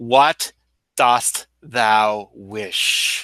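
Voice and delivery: very slow, thunderous feminine voice, like thunder's mother. Narrator voices a finned creature speaking, in a voice like the mother of thunder. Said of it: "in a voice that sounds like the mother of thunder".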